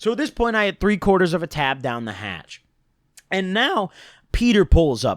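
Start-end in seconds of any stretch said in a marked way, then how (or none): 3.3-5.2 slow delivery, voice breaking partway through. Telling a story about taking a tab: voice crack. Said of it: "Pardon that voice crack".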